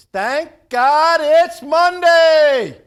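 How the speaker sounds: very loud, very slow, high-energy belted delivery. Greeting a co-host with high energy: Eric Thomas voice. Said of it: "In my best Eric Thomas voice".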